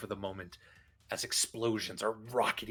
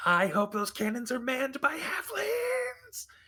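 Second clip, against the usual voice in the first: very high, shrill, tiny gnome shouting; 7 dB louder than usual. The narrator describes a battle as a gnome calls from high above: shouting gnome voice. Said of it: "that fucking gnome's voice from way up high going".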